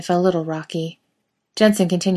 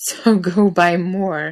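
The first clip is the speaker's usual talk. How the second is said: put-on wheezing, wheezy voice, much slower. Jensen finally answers Jared, wheezing. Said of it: "he finally wheezes".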